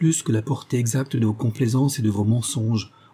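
ordinary delivery, nothing marked

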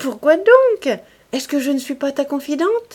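words broken by nervous laughter. She struggles as he keeps her from reading a letter, laughing nervously. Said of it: "en riant nerveusement".

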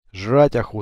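plain

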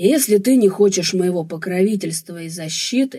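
plain

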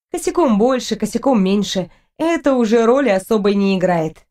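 ordinary delivery

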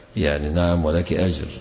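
normal talking voice

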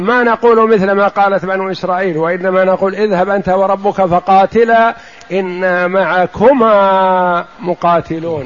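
ordinary delivery

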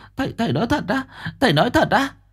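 frightened, alarmed, panicked, very high exclamation. Narrator reading Bà Liễu's reply to the master's news: panicked voice. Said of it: "giọng hoảng hốt".

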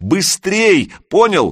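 shrill squeal, voice cracking very high. Reading a story, a character urging another to hurry over, voice breaking into a squeal. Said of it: "Голос сорвался на виск".

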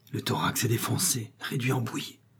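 dull, hollow, hushed, muffled voice full of terror. Savral goes on speaking to the narrator, terrified, muffled voice. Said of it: "de la même voix terrifiée et sourde".

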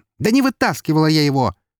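high, yelled, shouted, flung back. A narrator reads Eri's line to the one gripping her shoulders: shouted. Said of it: "крикнула Эри".

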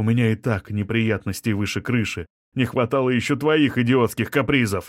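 plain

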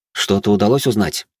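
ordinary delivery, nothing marked

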